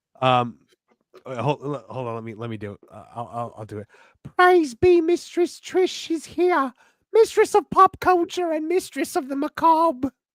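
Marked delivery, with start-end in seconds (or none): 4.4-10.1 put-on high, loud, angry shout in Southern accent. Offering to do it, the speaker introduces Mistress Trish in a Paul Bearer impression. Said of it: "I prefer angry Southern fat guy Paul Bearer".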